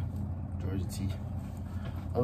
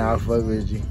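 ordinary talk

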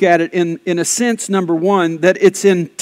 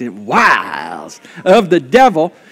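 Texas accent with drawl; 2 semitones lower than usual. Reading scripture aloud with the congregation, saying the word in a Texas accent. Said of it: "Now say it with a Texas accent".

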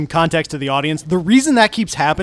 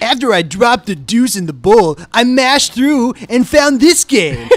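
deliberately bad angry gamer voice, higher pitch; 5 semitones higher, 4 dB louder than usual. Joking about finding a game, shitty Angry Video Game Nerd voice. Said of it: "do your best shitty angry video game nerd voice".

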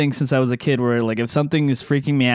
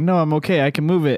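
tearful, crying, pleading voice. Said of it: "And I'm crying".

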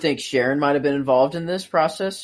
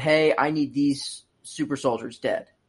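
plain

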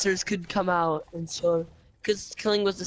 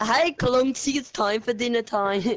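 put-on British accent, pitched up, calling out; 5 semitones higher than usual. Imagining how a man's mother called him to dinner, british accent. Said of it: "why'd you just do a British accent".

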